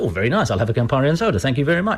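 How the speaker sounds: ordinary delivery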